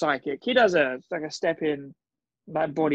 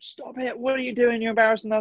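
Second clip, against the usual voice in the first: shouting, higher-pitched; 7 semitones higher than usual. Retelling how Rach shouted from the side: imitating Rach shouting. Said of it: "Rach was shouting at me from the side".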